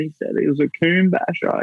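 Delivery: high, mock tearful voice through crying. Recalling what he told his mum through tears: retelling crying. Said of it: "I just remember just crying, going".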